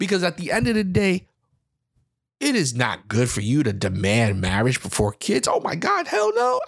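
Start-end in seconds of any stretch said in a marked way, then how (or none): 2.4-5.5 heavy sarcasm, dropped very low. Addressing the people listening, said sarcastically. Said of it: "I'm being sarcastic".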